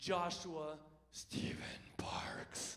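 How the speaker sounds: breathy, whispered demonic voice. Retelling how their mom suddenly said their full name, imitating mom's demonic voice. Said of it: "like this demonic voice comes out".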